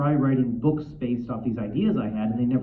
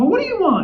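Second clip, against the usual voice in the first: high, loud, angry scowling delivery. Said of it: "he was scowling".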